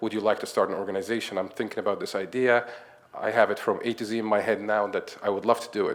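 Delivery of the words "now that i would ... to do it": ordinary talk, nothing marked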